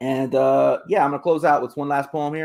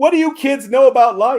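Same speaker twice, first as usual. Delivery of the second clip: put-on high, loud drunken men's yell. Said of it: "the men would yell back".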